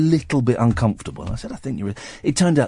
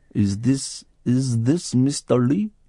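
put-on thick Indian accent, pitched higher; 2 semitones higher than usual. Retelling a call from an unknown number, imitating the caller: thick indian accent impression. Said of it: "Don't do the voice".

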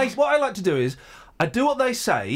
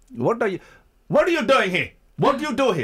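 put-on broken English accent, higher pitch; 6 semitones higher than usual. Retelling the bride's father turning up with guns and questioning them: put-on broken English accent. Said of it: "It was like that".

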